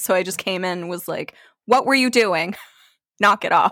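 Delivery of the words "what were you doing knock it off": mock irritable, cranky tone. Retelling walking in on strangers: imitating own cranky scolding. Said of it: "I was a little cranky".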